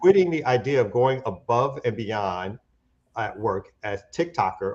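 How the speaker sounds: ordinary talk, nothing marked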